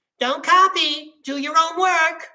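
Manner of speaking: screechy, shrill, loud nagging voice. A narrator reads the director mocking hypocrites who lecture students, screechy nagging voice. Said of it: "nagged in a screechy voice".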